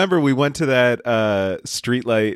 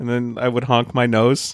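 ordinary talk

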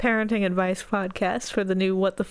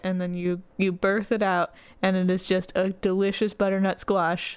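ordinary delivery

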